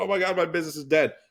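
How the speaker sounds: high, sobbing, despairing, panicked crying. Acting out a business owner in crisis: mock crying panic. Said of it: "Now you're crying".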